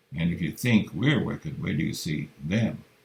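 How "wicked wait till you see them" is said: plain reading voice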